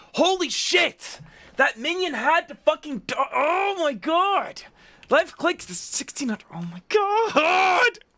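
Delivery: very high-pitched, loud, aggravated, frustrated outburst. Reacting as a minion seriously died: tilted frustration. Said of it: "I'm getting so tilted".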